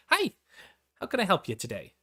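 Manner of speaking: high-pitched, sing-song, welcoming tone. Voicing a tavern hostess greeting arriving guests: high-pitched tone. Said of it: "in this high-pitched tone".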